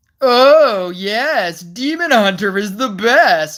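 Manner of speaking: heavy, obvious sarcasm, very slow. Showing the sarcastic tone that is not used when replying: obviously sarcastic tone. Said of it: "that's not how I say it".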